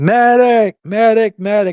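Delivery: very high yell at the top of the lungs. Pointing out the man who was shouting, imitate him shouting. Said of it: "the guy right here that was shouting".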